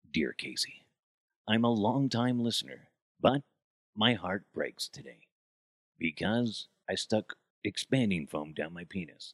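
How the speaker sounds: radio host reading voice, on-air style. Retelling an old radio bit, reading a listener's letter: Casey Kasem voice. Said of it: "Casey Kasem".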